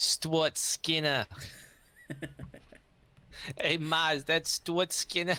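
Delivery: put-on Boston accent. Chatting about an upcoming game, saying a player's name in a boston accent. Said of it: "I say Stuart Skinner with the Boston accent".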